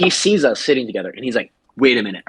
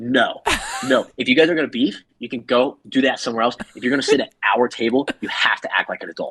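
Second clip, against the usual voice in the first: mock-stern firm scolding tone. Standing up at the bar table to scold two people arguing, retelling a firm telling-off. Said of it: "I like stand up and I put my hands on the table".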